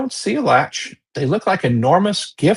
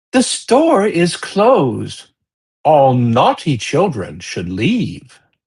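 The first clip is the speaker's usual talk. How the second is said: odd, strange feminine voice from above. Game master voicing an unseen voice from above the room, strange feminine voice. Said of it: "this strange feminine voice saying".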